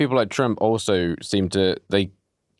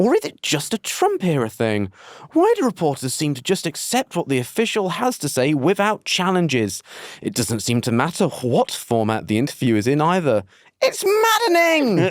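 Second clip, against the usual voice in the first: put-on British accent, laid on thick, high and swooping; 6 semitones higher than usual. Speaker reads a question aloud to Nikki, in a very British accent. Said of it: "I'm doing it in a very British accent this time".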